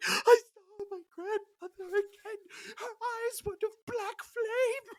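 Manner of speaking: play-acted, very high, barely audible sobbing. Retelling a man's meltdown after stepping off the pad, imitating someone crying. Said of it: "He starts crying".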